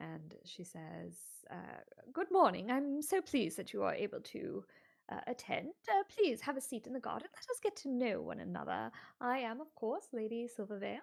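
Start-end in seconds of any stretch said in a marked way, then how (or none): 2.1-11.0 unforced, natural posh upper-class voice. Narrator voicing a lady greeting Turnip and Eva: upper-class Lady Silvervale voice. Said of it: "everything about her says, "I am upper class."".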